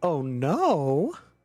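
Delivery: oh no, tune rising on no. A narrator voices your own words coming back to you, as a rising questioning 'oh no'. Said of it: "but now a question".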